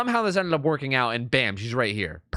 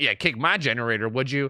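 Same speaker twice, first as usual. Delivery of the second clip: put-on cocky, taunting tone. Retelling what an opposing player seemed to say: mock-cocky taunt. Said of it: "just being super cocky and just being like".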